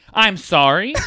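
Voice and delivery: put-on angry voice. Acting out being so mad you start apologizing: imitating furious apologizing. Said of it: "so mad that you start apologizing".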